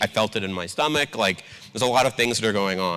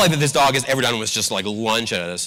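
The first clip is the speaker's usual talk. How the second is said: ordinary talk, nothing marked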